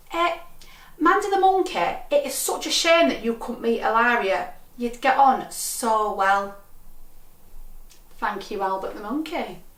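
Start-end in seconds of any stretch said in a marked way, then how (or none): 0.1-6.5 put-on Mancunian accent, little girl voice. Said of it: "said in her Mancunian accent".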